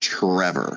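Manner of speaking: scornful, disdainful, openly contemptuous tone. Told to just say the name with disdain: 'Trevor' said with disdain. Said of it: "say it with disdain".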